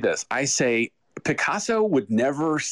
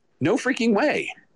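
very high-pitched righteous indignation; 10 semitones higher than usual. Describing a client asking for a PDF, the speaker answers with righteous indignation. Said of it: "I have righteous indignation in my voice".

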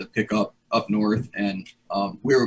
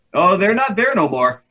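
high, halting, put-on broken English; 8 semitones higher, 4 dB louder than usual. Recounting a gunfight story, quoting what he said in put-on broken english. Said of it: "so it's like kind of broken English".

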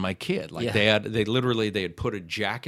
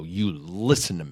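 gruff, gravelly, stern, no-nonsense dad voice; 2 semitones lower than usual. Retelling a parenting moment after other kids were mean, using a dad voice. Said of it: "I pulled out like my dad voice and I go".

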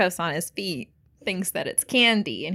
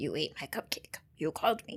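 hushed, breathy, whispered creepy clown voice; 10 dB quieter than usual. Retelling a scene as the clown comes out: Cupcake the Clown voice. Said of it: "That's essentially what his voice is like".

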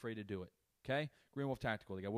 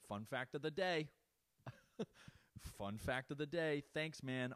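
mocking, dry, sarcastic tone; 4 semitones higher than usual. A father retells how he answered his son, retelling a sarcastic reply. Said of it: "the sarcasm doesn't help".

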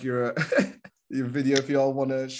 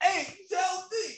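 acted-out, very high calling yell; 4 dB quieter than usual. A speaker acts out how someone calls out, imitating a yell from the hallway. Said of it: "It sounds like you're yelling from the hallway".

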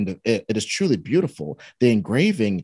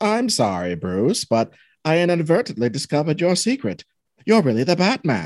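put-on mid-Atlantic accent, pitched up; 5 semitones higher than usual. Acting out a scene, answering Bruce after being caught snooping, in a mid-Atlantic accent. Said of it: "I'm gonna do a mid-Atlantic accent".

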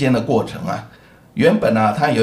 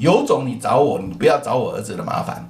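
plain

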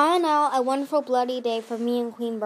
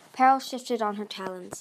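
plain

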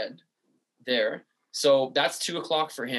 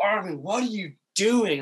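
mock, high, stretched-out, drawn-out call; 6 semitones higher than usual. Retelling a bike ride, the speaker reenacts yelling at a kid going the wrong way. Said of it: "yelling at him like top of my lungs".

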